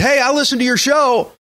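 high, hollered call. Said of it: "she hollered".

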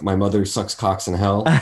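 acted deadpan tone. Speaker retells what they said back to a man, retelling a deadpan reply. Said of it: "I looked at him like deadpan".

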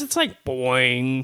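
mock slow, drawn-out boing sound effect.

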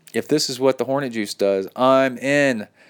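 normal talking voice

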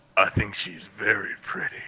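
very quiet, low, hushed, creepy pervy voice. Showing another speaker how the line should be said: perv voice. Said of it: "you got to put on the perv voice".

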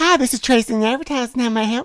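put-on Southern belle accent. Answering a transferred phone call as the advertising assistant: Southern belle accent. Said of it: "You sound like a true Southern Belle".

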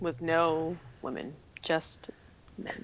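mumbling under breath. Adding a remark while another speaker lists plans: muttering under breath. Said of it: "I was muttering under my breath".

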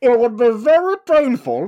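very high, very loud, swooping, booming villain voice. Two people reenact a movie scene line by line, Bane voice. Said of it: "the Bane voice is good".

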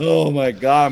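laughing so hard it turns to crying. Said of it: "I'm crying".

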